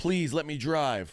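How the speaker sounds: high, frantic, panicked, play-acted pleading tone. Retelling a passenger's plea to his mom: imitating a man freaking out. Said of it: "this dude's freaking out".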